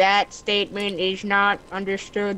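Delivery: clunky, flat, monotone fake robot voice. Friends joke that he has become roboty; he answers in a bad robot impression. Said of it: "This is a bad impression of a robot".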